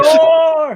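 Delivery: very high-pitched, loud announcer voice. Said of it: "Pretend you're a Mexican soccer announcer".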